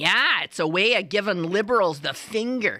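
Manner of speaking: put-on Wisconsin accent. Quoting a seller from Wisconsin in a put-on Wisconsin accent. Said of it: "I'll do it in a proper accent".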